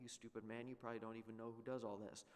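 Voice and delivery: normal talking voice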